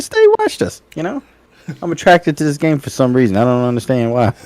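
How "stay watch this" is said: very high excited exclamation. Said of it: "I said".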